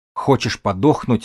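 ordinary delivery

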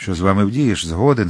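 plain

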